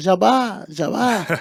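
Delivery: high, light, called-out voice. Retelling friends calling at the house gate: imitating people shouting. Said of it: "começou a gritar no portão da minha casa".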